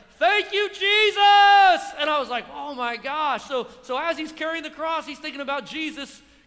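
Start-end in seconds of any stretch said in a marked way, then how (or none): 0.2-1.8 booming, very loud bellow, one word drawn out. Retelling what a man carrying the cross cried out, retelling a bellow. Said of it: "it's like this bellow voice came out".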